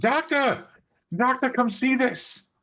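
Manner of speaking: very high, overjoyed, excited shout. Calling another character into the room, in-character excited call. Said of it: "way more excited than you would have ever thought [name] could sound".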